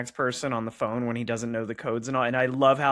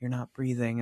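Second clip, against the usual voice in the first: calm, gentle put-on voice, quieter; 4 dB quieter than usual. Retelling a film scene where Benicio del Toro leans in: calm, gentle Benicio del Toro line. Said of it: "leans in really cool, calm, and sweet".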